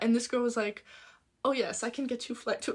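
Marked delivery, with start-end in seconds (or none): 1.4-2.8 put-on German accent, quieter. Retelling what the help center girl said: german accent. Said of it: "Was that German?".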